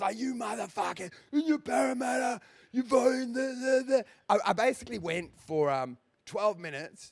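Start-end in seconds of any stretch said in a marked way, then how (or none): 0.2-4.1 high, furious, heated ranting tirade. Retelling an on-stage reply to hecklers after being mocked: retelling an angry rant. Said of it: "I was so angry".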